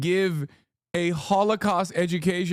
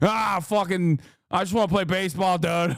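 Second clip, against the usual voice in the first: weird, affected, mocking, odd put-on voice. Imagining a friend at camp, speaking in an odd mocking voice. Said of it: "I don't know why his voice is like this".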